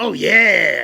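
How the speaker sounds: very loud, rough, drawn-out booming "yeah" shout. Speaker shows how his attempt at the Kool-Aid Man goes: Kool-Aid Man impression. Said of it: "try to do the Kool-Aid Man impression".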